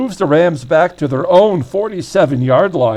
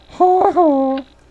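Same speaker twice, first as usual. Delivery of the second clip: bad, mocking ha-ha laugh, pitched high; 12 semitones higher than usual. Calling a football play, the commentator breaks into a terrible Nelson 'ha ha' impression. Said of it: "That was a terrible Nelson impression there".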